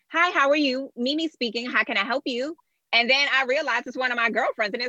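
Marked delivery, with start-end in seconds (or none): 0.1-2.5 polished, pitched-up professional phone voice. Retelling answering calls as a receptionist: imitating her polished receptionist phone voice. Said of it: "you definitely got".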